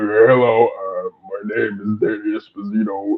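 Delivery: very deep, soft, quiet rumbling voice. Recalling first time on stage after hours of silence, deepest Bane-like voice. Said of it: "I had the deepest".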